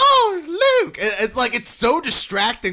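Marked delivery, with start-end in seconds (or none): 0.0-1.0 very high, loud faux British accent, stretched "oh". Mocking an actress's line from the movie: imitating Leia's faux British accent. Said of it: "faux British accent that goes in and out".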